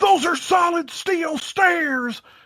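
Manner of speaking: very high, drawn-out ringside commentator call. Retelling an announcer's call during a match: imitating Jim Ross. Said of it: "Jim Ross goes".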